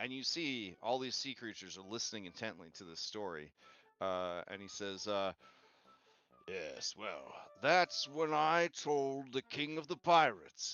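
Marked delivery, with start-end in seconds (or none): 6.5-10.7 hearty, loud, boisterous, rising storyteller voice. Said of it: "a boisterous, a boisterous".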